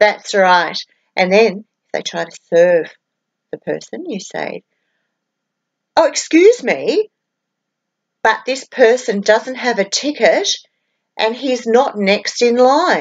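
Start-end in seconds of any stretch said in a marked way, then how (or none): 6.1-13.0 courteous, pointed delivery. Showing how to object when someone without a ticket gets served; very loud voice. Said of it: "in a very loud voice".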